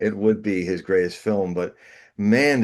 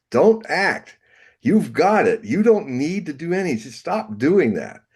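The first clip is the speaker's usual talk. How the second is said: high, raised yelling; 7 semitones higher than usual. Retelling what the acting coach yelled at him: imitating someone yelling. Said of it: "he yelled at me".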